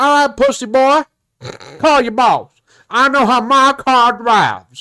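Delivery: put-on high-pitched rural country-boy accent. Retelling a man's reply to a request to call the boss, in a country voice. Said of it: "the country voice".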